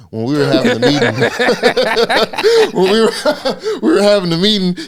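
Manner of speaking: high, slow, laughing through the words.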